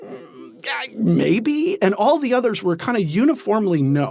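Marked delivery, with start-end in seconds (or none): 0.0-1.8 hesitant, reluctant, high murmured voice. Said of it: "kinda hesitantly going".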